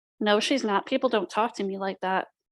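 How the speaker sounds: ordinary talk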